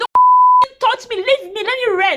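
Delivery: shrill, loud, swooping angry scream, don't stretched long. Retelling labor pains as nurses touched her: imitating someone screaming. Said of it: "somebody was screaming".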